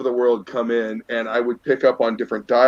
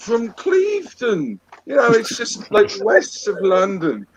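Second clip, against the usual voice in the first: put-on very poor British accent, very high and swooping; 10 semitones higher than usual. American retelling answering people who asked where they're from, piss-poor fake British accent. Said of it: "an American doing a piss poor fucking British accent".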